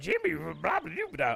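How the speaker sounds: put-on little alien creature voice. Describing how a caveman-like game character talks, the speaker mimics him in a Yoda voice. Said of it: "I made him sound like Yoda".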